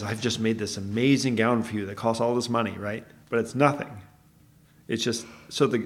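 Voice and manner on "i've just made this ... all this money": normal talking voice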